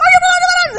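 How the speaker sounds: very high-pitched, loud shouted yell. Retelling how people pointing from beyond the trees called out: imitating villagers yelling. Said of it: "they're yelling at me".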